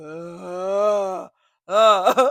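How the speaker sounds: put-on, drawn-out stupefied groans. Retelling a dazed man on the floor: imitating someone dazed and high. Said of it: "Sound like he was in a deep high".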